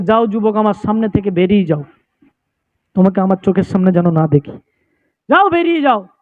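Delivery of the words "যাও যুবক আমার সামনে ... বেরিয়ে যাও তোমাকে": plain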